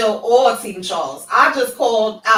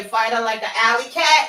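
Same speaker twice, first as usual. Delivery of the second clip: plain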